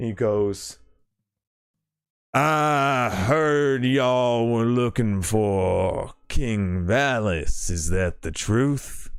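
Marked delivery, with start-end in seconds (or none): 2.3-9.1 very loud, booming, rolling call. Game master voicing a man at the railing calling to the crowd below, booming voice. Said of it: "his voice booms out across across the fort".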